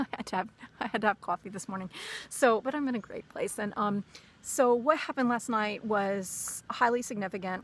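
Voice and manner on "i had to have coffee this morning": rushed, fast-paced chatter. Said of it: "why I'm speaking so quickly".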